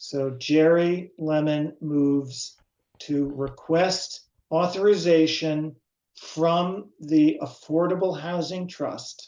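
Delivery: slow, careful, deliberate dictating pace.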